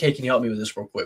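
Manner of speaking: ordinary talk, nothing marked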